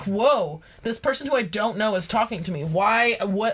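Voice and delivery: normal talking voice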